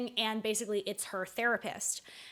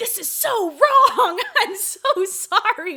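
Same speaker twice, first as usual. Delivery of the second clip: piercing, slow, full-volume, high, drawn-out screaming; 11 semitones higher, 14 dB louder than usual. Retelling what the neighbors heard: imitating a man screaming. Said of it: "And the guy screaming".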